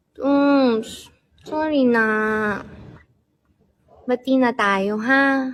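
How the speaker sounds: put-on babyish baby talk. Saying sorry on request to make up: baby talk. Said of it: "Gawin mo na yung sorry na".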